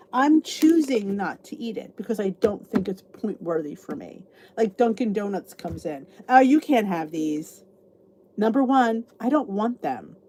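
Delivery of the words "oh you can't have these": loud, patronising, condescending, talking-down tone. Retelling what others say when Dunkin Donuts comes in, mock-condescending. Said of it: "they say it condescendingly".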